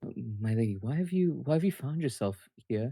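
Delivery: very quiet, soft voice. Voicing a shocked character asking a lady why she is here: very quiet voice. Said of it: "says to you very, very quietly".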